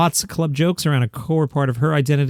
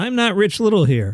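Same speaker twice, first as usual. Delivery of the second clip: ordinary talk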